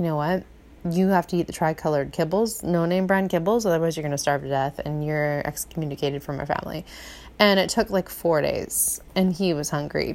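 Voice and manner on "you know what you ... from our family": usual speaking voice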